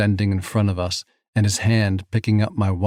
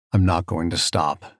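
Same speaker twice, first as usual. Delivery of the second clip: mock steady, low, calm, immovable tone; 4 semitones lower than usual. Narrator voicing the man's reply to someone who can't breathe, calm, immovable tone. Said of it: "he says in that same calm, immovable tone".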